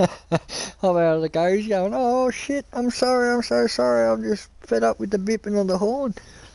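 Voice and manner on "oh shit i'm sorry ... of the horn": put-on frightened man voice, higher. Retelling a man apologizing to a taxi driver: imitating a scared man. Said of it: "the dude literally shit himself".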